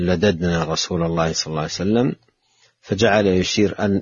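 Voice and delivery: ordinary talk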